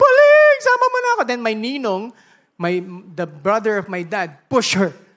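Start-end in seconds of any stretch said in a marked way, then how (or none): 0.0-1.2 shrill, very high, very loud grieving wailing shout. Retelling a grandmother shouting at a burial: imitating a grandmother shouting. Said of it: "she was just shouting".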